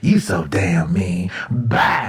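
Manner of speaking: angry, mad, very low voice. Speaker acting out a phone call, imitating her getting mad. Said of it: "Now she mad at you".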